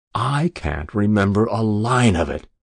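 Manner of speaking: ordinary delivery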